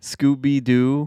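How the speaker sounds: deliberately stretched, very slow, drawn-out and loud. Listing ridiculous movies someone quotes, the speaker says Scooby Doo really slowly. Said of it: "I said that really slow".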